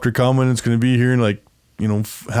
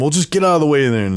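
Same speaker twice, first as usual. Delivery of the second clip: put-on loud shouting; 3 semitones higher than usual. Retelling Amanda yelling at a useless ranger: imitating Amanda yelling. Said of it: "Amanda just yelling".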